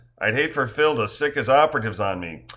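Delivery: ordinary delivery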